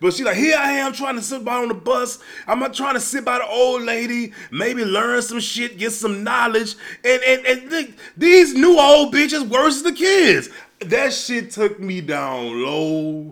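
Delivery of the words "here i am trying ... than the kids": mock frantic rant, higher. Retelling a woman's phone rant on the bus: imitating someone spazzing out. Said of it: "starts spazzing like".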